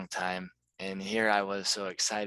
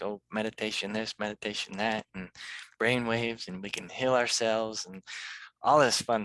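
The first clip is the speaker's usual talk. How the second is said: plain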